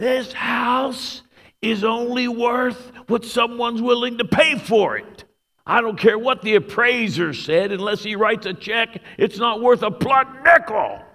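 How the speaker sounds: shrill, very high, full-throated shouting at top of voice. Retelling a man yelling about a house's worth while the speaker stood by; retelling a yell. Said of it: "he yells at the top of his voice".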